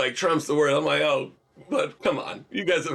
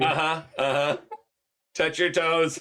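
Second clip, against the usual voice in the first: put-on synthesized computer voice. In a joking back-and-forth, speaking as a Stephen Hawking computer voice. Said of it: "computer voice being like".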